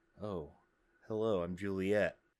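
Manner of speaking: put-on soft condescending voice. Imitating how Juliet always talks: soft-spoken condescending Juliet voice. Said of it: "Juliet is always just kind of like".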